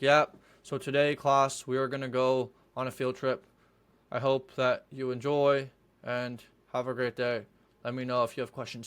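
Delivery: low, flat, lifeless, bored teacher-like drone. Imitating a teacher with no energy announcing a field trip: mock-bored flat tone. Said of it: "Boring, lame".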